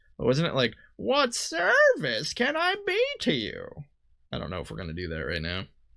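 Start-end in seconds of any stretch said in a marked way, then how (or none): 1.0-3.7 zany, very high, very slow, swooping and dragged. Trying again the voice used earlier for Hearn: crazy Hearn voice. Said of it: "a crazy voice with Hearn".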